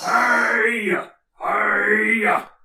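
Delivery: high, drawn-out yelling call, hey stretched. Narrating a character who waves to get your attention, yelling out for attention. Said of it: "yelling out and waving his hands".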